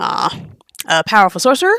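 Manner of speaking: usual speaking voice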